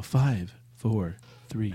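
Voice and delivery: pleasant, nice, feminine game announcer voice. A gamer imitates a game's countdown announcer for a co-host; imitating a nice countdown voice. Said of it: "it starts counting down in a nice voice".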